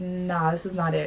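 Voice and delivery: normal talking voice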